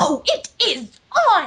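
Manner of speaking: very slow, drawn-out, swooping manly cartoon voice. Retelling what a guy behind them said at a new school, manly Rarity impression. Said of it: "in his best manly rarity impression".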